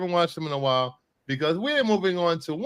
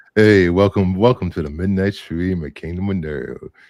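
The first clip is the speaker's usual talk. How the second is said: put-on deep bass voice, much louder; 11 semitones lower, 6 dB louder than usual. Podcaster demoing a midnight-stream welcome, put-on deep bass voice. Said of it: "Bruce puts two octaves on his bass".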